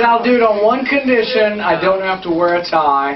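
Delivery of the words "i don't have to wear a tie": normal talking voice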